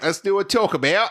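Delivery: put-on Australian accent. Asked by a co-host to do his australian voice: put-on australian accent. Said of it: "Do your Australian voice".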